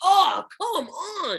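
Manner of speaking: freaking out, high, slow panicked whine.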